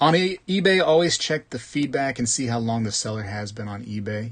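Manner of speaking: usual speaking voice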